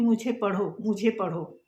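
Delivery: ordinary delivery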